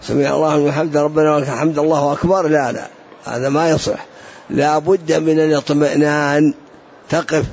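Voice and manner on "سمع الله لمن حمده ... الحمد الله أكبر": hurried, snatched, words run together with no pause. Demonstrating prayer words said as if being chased: rushed, no pause. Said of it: "تأتيبها خطف كأنك ملاحق".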